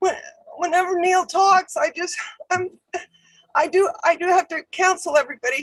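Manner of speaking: crying, tearful, breaking voice. Speaking about someone whose talks move them, crying with voice breaking. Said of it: "I'm sorry, I'm crying".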